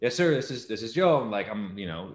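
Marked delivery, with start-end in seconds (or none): 0.0-1.2 very nervous, jittery, pitched-up, raised voice. Retelling answering a phone interview in a dorm room: imitating his nervous younger self. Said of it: "nervous as hell".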